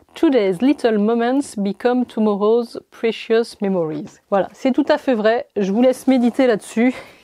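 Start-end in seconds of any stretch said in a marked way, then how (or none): 0.1-4.2 best put-on English accent, given its all. Reading a quote from a gift box aloud, in a put-on english accent. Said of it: "avec mon plus bel accent anglais".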